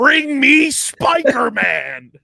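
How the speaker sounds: mean, shrill, swooping, high, loud yell. Talking about a prospect's call-up, the speaker drops a mean J. Jonah Jameson impression. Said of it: "drop the meanest impression of".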